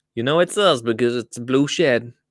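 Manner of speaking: put-on American accent. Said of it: "I'm not gonna be able to stop the American accent".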